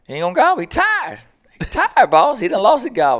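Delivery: tired, weary voice pitched way up high.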